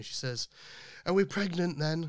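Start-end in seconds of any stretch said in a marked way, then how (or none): 1.0-2.1 loud, high-pitched shout. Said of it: "my wife shouted down to me".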